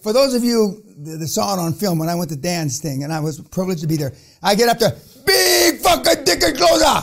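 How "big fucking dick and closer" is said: high, slow put-on Japanese accent. Retelling getting up at an event: imitating a Japanese accent. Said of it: "That's my best imitation of a Japanese".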